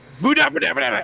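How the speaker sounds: loud shouted battle cry. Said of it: "saying Muda".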